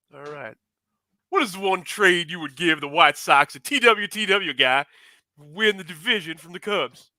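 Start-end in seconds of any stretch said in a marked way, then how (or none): 1.3-6.9 belting, loud voice. Reading a submitted question aloud as asked: Hawk voice. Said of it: "I was asked to do this in a Hawk voice".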